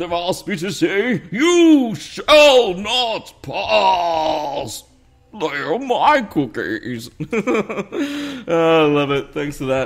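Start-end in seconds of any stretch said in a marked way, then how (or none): 1.3-7.1 booming, slow, grand wizard voice. Reading a viewer's shout-out request, saying it in a Gandalf voice. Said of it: "say in a Gandalf voice".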